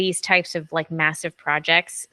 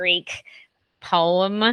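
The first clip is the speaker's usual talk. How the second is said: normal talking voice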